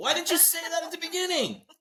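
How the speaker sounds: high-pitched, exasperated mock yell. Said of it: "Don't yell at everybody".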